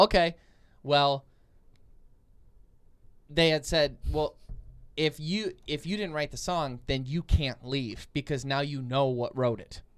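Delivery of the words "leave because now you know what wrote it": ordinary talk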